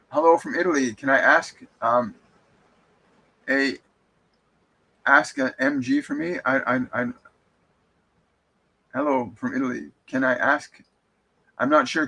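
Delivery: ordinary delivery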